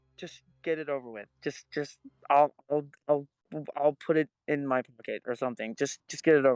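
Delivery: whispering in a character voice. Whispering in character to Arcturus across separate cubicles: whispering in character. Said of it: "I'll whisper over to Arcturus and go".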